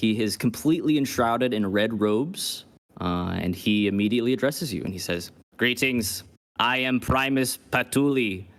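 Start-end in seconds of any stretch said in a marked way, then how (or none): 5.6-8.4 put-on robot voice, slower. The narrator voices a robed man who walks in and greets the listener: robotic voice. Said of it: "God, I hate robots".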